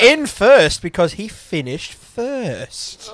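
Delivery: slow, high, loud read-out voice. Reading out race results in a Will Buxton impression. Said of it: "my best Will Buxton imper-, impersonation".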